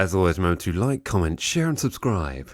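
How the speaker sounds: seductive, sexy, sultry voice. Asked by the host to do the subscribe reminder: sexy voice. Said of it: "with that sexy voice".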